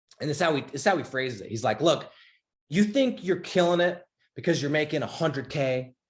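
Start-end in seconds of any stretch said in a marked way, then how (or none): 1.8-5.9 fired-up, heated stage ranting. Describing a stage speech to door-to-door salesmen, imitating Ed Mylett's fired-up rant. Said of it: "He's going off".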